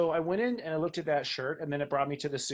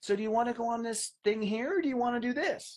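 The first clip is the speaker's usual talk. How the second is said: put-on childlike babying voice, baby talk; 7 semitones higher than usual. Explaining how to talk to your own heart, demonstrating childlike baby talk. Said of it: "I'll sort of baby my heart".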